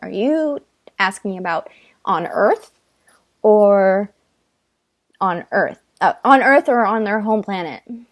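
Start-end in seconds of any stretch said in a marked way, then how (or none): none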